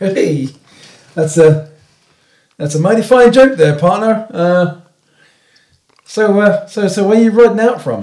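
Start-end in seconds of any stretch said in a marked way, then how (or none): 0.0-4.3 words broken up by chuckles, laughing while talking. Voicing a character who reacts to a joke, laughing while talking. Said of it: "the guy who's sort of talking laughs".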